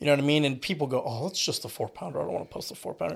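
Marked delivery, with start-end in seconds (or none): 1.1-3.2 soft, snooty, dismissive put-on snob voice. Talking about fishing, imitating people who scoff at a small catch, in a put-on snobby voice. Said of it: "That's a snobby voice".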